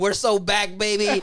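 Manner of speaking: booming, drawn-out excited shout. Retelling watching a band's comeback concert video: imitating own excited yelling. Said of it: "either crying or yelling".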